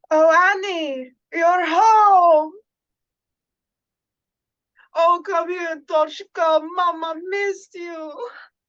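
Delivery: put-on thick European accent, very loud and slow. Voicing the mother greeting her child home: thick European accent. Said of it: "by her thick accent".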